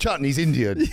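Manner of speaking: taunting, loud, high-pitched mocking voice. Laughing at the other speaker, repeating his line: mocking imitation of how he said it. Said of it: "The way you said it".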